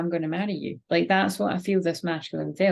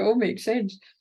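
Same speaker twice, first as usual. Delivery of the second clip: words spoken through laughter; 3 semitones higher than usual. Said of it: "I'm laughing 'cause it's like".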